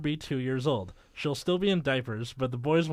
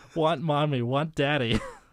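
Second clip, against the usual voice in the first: put-on wailing like a cartoon child. Reading a story aloud, voicing the toddler Hannah: Homestar Runner voice for Hannah. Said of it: "the voice of Hannah is going to be me doing Homestar Runner".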